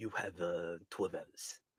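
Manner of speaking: very low, very quiet, deep hushed delivery. Imitating how the boss says the deadline line: imitating the boss's low voice. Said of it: "He says it so low and stuff".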